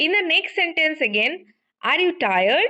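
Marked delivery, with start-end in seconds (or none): 1.8-2.7 rising tone on the word tired. Asking a question for confirmation, rising tone on tired. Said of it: "I am using rising tone".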